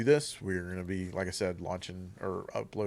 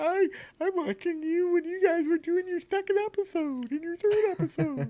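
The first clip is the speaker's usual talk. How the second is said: squeaky puppet voice, very high; 3 dB louder than usual. Asking long-time viewers to comment, as if in a Muppet voice. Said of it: "sound like a Muppet".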